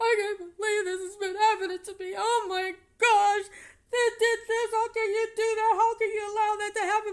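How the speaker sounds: play-acted distraught, tearful crying, very high, very loud. Retelling a call with the house manager, the speaker acts out their own crying complaint. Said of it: "I'm crying".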